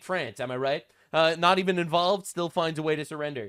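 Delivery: ordinary delivery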